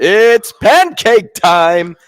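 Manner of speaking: loud booming holler. Remembering his cousin's high school games, the speaker imitates Tremblay's booming scream. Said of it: "big, booming voice, and uh, he would just scream out".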